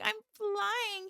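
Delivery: very high, slow, soft, dazed possessed voice. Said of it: "She's like".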